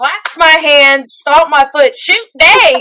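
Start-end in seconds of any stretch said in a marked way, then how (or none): 2.0-2.8 put-on loud outburst in a heavy twang accent. Recalling being scared in a haunted house, the speaker retells yelling in a twang accent. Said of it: "I yelled in a very twang accent".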